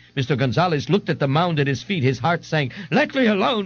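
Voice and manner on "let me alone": shrieking, high-pitched screaming outcry. A man who fell from a stool refuses help from the man beside him, screaming. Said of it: "Ignatius screamed".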